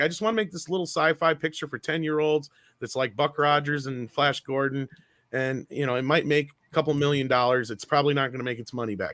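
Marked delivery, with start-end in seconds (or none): none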